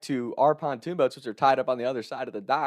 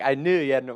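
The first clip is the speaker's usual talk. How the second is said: usual speaking voice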